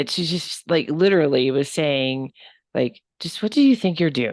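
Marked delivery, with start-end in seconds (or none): 3.2-4.3 put-on stern, scolding grandmotherly voice. Retelling what a grandmotherly spirit said: imitating a stern grandma tone. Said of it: "That grandma tone".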